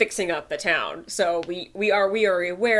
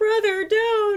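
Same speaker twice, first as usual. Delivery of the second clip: put-on pleading voice, higher pitch. Retelling a comic joke where Alphonse begs his brother: Alphonse pleading. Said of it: "Alphonse sits on the corner being like".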